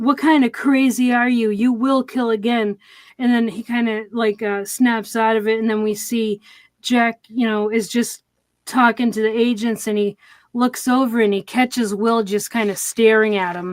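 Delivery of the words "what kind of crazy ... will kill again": mock yelling. Retelling a scene where one character walks up and speaks: imitating someone yelling. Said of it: "kinda yelling".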